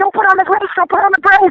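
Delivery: mock, high, repeated screaming. Retelling how the tour manager screamed a warning: imitating someone screaming. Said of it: "my tour manager's screaming at me".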